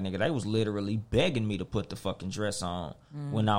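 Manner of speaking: usual speaking voice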